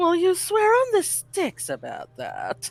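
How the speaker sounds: very high, heavily exaggerated sarcasm, high and swooping. As Hoshimi, making sure the others know she's joking, overly sarcastic. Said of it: "in an overly sarcastic voice".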